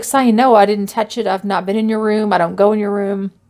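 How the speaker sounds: usual speaking voice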